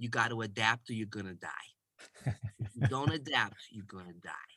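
put-on thick, broad New York accent. Retelling what a boss told the group: imitating a thick new york accent. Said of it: "he was this thick New Yorker, had this accent".

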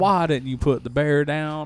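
badly imitated, laid-on Southern accent. Doing a Con Air line: terrible Nicolas Cage impression, bad Southern. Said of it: "I'm doing a terrible Nick Cage".

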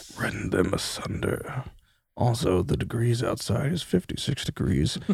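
hushed, breathy, barely voiced whisper. Voicing something in a character's head that whispers to her: whispering voice. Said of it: "It whispers to you".

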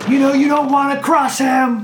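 loud, very high hollering shout. Voicing a young man calling toward the house again: yelling. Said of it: "he yells towards the house again".

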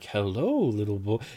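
soft, typical storybook fairy voice. Describing how a fairy is usually imagined talking to a little boy, imitating a fairy voice. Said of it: "you think a fairy's like".

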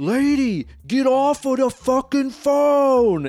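put-on resonant, booming New York accent, very high pitch. Retelling a man in the theater, in a booming Yankee New York accent. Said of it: "in just the most like resonant, booming, fucking big-ass Yankee New York accent".

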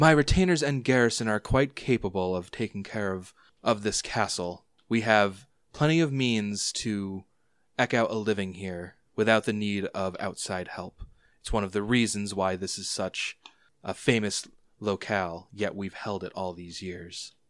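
haughty, commanding, proud, smug lady's voice. The lady of the castle answers a question about how her people survived, proud and smirking. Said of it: "One is a woman who looks like she would have been a rare beauty in her prime, but in her middle years she's filled out and her big bone frame has left her a handsome if rough-edged woman. / One is a w".

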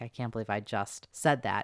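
embarrassed, giggling through the words. Retelling how the host fell on the bed afterward: imitating Lisa Ling laughing while talking. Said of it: "is just laughing like".

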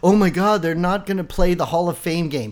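usual speaking voice

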